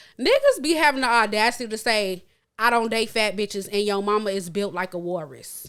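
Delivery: ordinary talk, nothing marked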